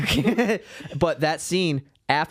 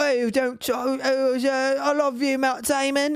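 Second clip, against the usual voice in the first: very drawn-out, high, very slow put-on British accent; 11 semitones higher than usual. Speaker retells a scene from Good Will Hunting, imitating a British girl's accent. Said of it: "it's a British girl being like".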